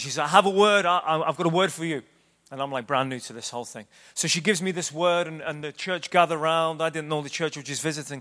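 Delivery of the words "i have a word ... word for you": mock eager, excited, urgent, pressing, stumbling start. Retelling a woman at a church announcing she has a word for him: imitating an excited, urgent woman. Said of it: "she's very excited and, and very urgent".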